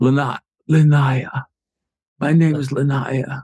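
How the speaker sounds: weak, faint voice. Narrator giving a woman's reply when asked her name, in Linnea's really weak voice. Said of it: "Her voice is really weak".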